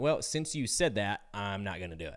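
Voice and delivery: ordinary talk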